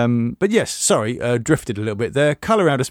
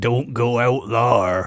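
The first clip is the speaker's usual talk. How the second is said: slow, rural West Country-ish accent. Suggesting how an author's characters might be read aloud: West Country-ish accent. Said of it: "in a sort of what would now be more of a sort of West Country-ish accent".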